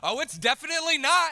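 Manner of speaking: shrill, very high, very loud yell. Telling a story, quoting what they yelled at an 80-year-old man: retelling a yell. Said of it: "I yell at this 80-year-old man".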